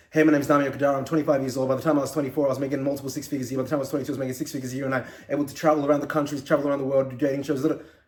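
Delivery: very fast, nonstop, rapid-fire, rattled-off delivery. Teaching listeners to vary their speed, the speaker demonstrates speaking very, very fast. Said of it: "You're speaking very, very fast".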